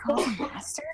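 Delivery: put-on fearful whisper, spoken as an aside. Voicing a character leaning to a companion in fear: fearful aside. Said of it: "Hikari leans to Kitai with fear".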